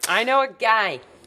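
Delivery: put-on New Jersey accent. Retelling a character's line from the episode: imitating a New Jersey accent. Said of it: "That was a New Jersey if I've ever heard one".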